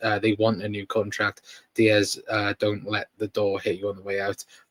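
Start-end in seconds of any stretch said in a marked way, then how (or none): none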